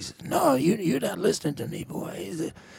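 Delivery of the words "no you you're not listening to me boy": rough, raspy, high voice. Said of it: "Jimmy's voice is, you know, raspy".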